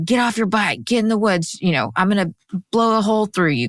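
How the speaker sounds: put-on furious shouting of an angry man. Narrating a story, retelling how Dennis yelled at the girl: imitating Dennis yelling angrily. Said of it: "he's just yelling at her".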